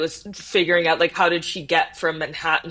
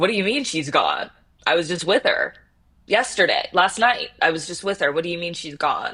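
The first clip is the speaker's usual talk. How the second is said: put-on defensive, pushing back, insistent tone. Retelling a phone call with a father, imitating own defensive reply. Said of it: "I got very defensive with my dad".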